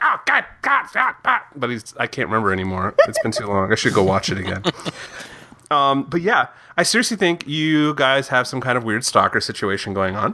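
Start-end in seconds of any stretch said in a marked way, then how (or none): 0.0-1.4 very high, tweaky, freaked-out squealing. Trying to recall a gnome character's voice from an episode, tweaky freaked-out Underpants Gnome voice. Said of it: "really tweaky and freaked out".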